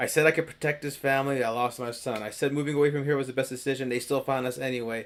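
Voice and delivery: ordinary talk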